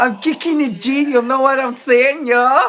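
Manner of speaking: loud, bad put-on Japanese accent, slangy.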